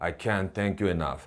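flat, low, toneless monotone, insincere, rattled off fast. Showing a thank-you that lacks sincerity: flat, low voice. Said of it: "톤을 좀 밋밋하게 목소리를 깔고 얘기하면은요".

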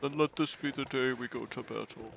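goofy put-on character voice. Imagining Santa speaking, doing a Santa voice. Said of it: "enough with the Santa voice".

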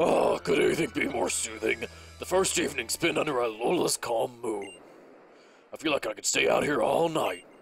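burliest put-on voice, extremely burly. Giving the character Mom a voice: the burliest voice ever. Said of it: "Gonna give Mom the burliest voice ever".

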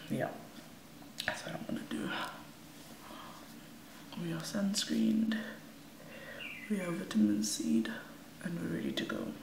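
gentle, soft voice, kept down and quiet. Talking quietly so as not to wake someone up: speaking softly. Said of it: "I'm talking s-, um, softly".

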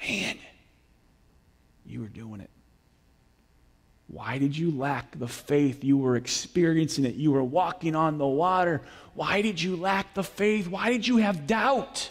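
hushed, gentle, soft whisper. Speaker voicing Jesus as he pulls someone out of the water, gentle whisper. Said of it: "it could have been a gentle whisper".

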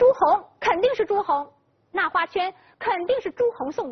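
sudden excited burst.

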